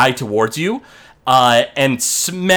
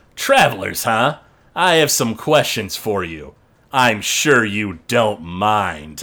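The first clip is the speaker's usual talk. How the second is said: smug, smirking character voice, lower; 5 semitones lower than usual. Voicing a dragonborn on a wyvern who questions three travelers: smirking dragonborn rider. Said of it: "smirks and just goes".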